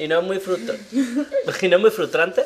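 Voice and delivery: high, laughing giggle.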